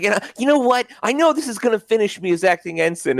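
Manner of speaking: high whiny voice.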